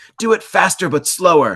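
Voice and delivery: very high, very loud, shrill barked shout. Retelling the producer's odd studio instructions: imitating someone shouting orders. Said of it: "shout things like".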